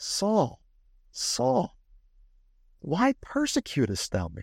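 mock-tender, loving delivery. Imagining the voice that spoke to saul, acting out a loving, tender tone. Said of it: "incredibly loving and tender".

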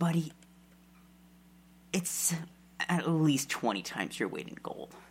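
hushed stage whisper. Role-playing a character answering how much he's being paid: half-whispering. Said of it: "He kind of leans close and he whispers".

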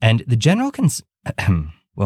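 sudden voice crack jumping very high. Podcast host carries on talking, voice cracking. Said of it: "my voice cracked".

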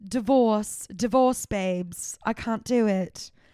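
put-on very slow, thick London accent, very drawn out. Retelling her answer about what the new album is about, in a very heavy London accent. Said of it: "It's very heavy London accent".

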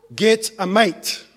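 ordinary delivery

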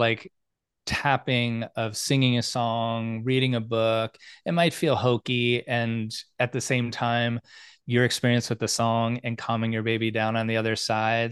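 usual speaking voice

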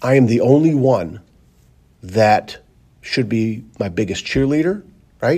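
choked-up voice thick with emotion. Talking about being your own biggest cheerleader against discouragement: choked up. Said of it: "I'm getting choked up here".

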